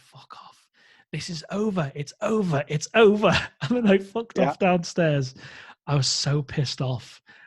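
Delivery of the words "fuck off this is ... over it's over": full-on, high-pitched screaming outburst. Retelling coming back to find her standing in the corner, retelling a scream. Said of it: "I screamed".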